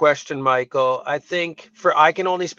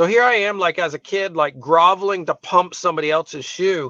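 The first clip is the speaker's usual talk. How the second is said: plain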